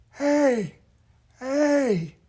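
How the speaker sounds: put-on breathy, strained elderly voice, very high pitch. Demonstrating the core sound of an old person's voice, airy and tight-throated. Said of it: "a lot of air and a very tight throat".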